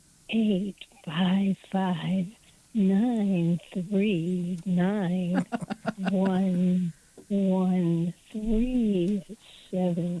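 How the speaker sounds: mock, playfully seductive, sultry voice. Asked to read out a phone number, mock sexy voice. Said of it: "say the phone number in a sexy voice".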